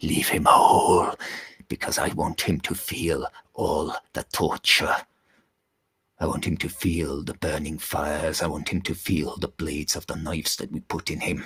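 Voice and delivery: put-on airy elderly male voice. Narrating the story, reading the old god's reply to Loki in a breathy, weak Allfather voice. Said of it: "his voice is the voice of an old man, very breathy and weak".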